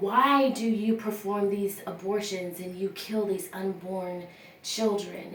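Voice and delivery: ordinary talk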